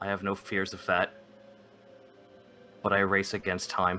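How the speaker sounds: quietly muttered under the breath. Voicing a character replying to another character, muttered under his breath. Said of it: "he says under his breath".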